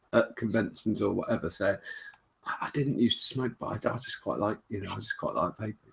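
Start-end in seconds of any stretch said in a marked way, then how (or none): 2.4-5.7 hushed, half-voiced stage whisper. Retelling what people at conventions quietly admit: imitating a hushed half-whisper. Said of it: "in a hushed whisper".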